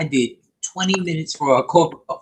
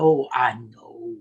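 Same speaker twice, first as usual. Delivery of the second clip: hushed whisper, lower and quieter; 5 semitones lower, 4 dB quieter than usual. Answering a friend's quiet remark across the table: whispering. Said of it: "I don't know why I'm whispering".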